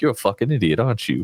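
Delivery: put-on Southern accent. Showing how a rude character raised by hags talks: Southern accent. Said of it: "I do a Southern accent for him".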